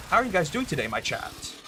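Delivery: zesty, slightly high delivery. Demonstrating greeting their chat, saying it with a bit of zest. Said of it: "Saying my chat with a little bit of zest in your voice".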